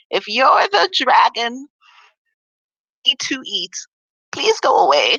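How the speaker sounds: high, squeaky, little yelping voice, swooping pitch. Voicing someone behind the Quest Giver door after Chelsea knocks, squeaky yelping voice. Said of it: "a squeaky voice kind of yelps out".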